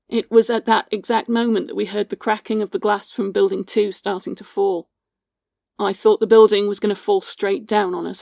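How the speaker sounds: usual speaking voice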